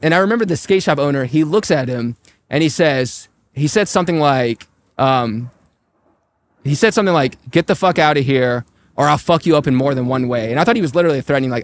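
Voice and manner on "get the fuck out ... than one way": put-on aggressive, menacing tone. Retelling a skate shop owner threatening a soldier: imitating an aggressive threat. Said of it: "he said it in such an aggressive way".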